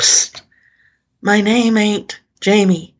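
put-on very loud, thick Southern accent. Retelling what a barefoot Confederate soldier said to him: very loud strong southern accent. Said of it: "a very loud, strong southern accent".

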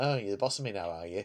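low, soft, sulky muttered voice.

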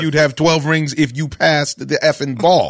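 ordinary talk, nothing marked

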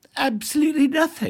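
put-on very high, clueless British lady accent. Acting out a woman's answer when asked a question, in a clueless British lady accent. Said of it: "in my clueless British lady accent".

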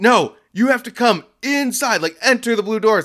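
mock shrill, pitched-way-up, upset shouting. Speaker retells how a man yelled at them, retelling a yell. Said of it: "And he's like yelling at me".

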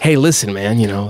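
clear pastor voice straining to sound cool. Describing how a guy sounds, the speaker imitates a pastor trying to be cool. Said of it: "like a 45-year-old pastor trying to be like famous".

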